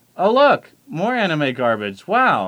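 reading with heavy, exaggerated emphasis. Asked to read a written line emphatically, exactly as written: emphatic exaggerated reading. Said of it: "You need to read this emphatically".

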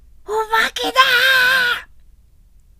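very high-pitched, very slow, long drawn-out yell. Reading a story aloud, a child crying out about a ghost: shouting. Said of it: "と誰かが叫ぶと".

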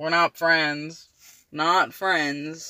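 said sarcastically. In a scene, replying after being called a buddy: sarcastic. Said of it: "your intonation suggests that you are being sarcastic".

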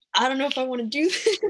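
panicky, rushed and laughing.

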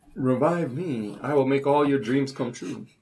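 hushed wish-granting genie voice. Prompted by another player, speaker repeats the line in a genie voice. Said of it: "say like you're a genie".

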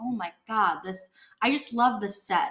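ordinary talk, nothing marked

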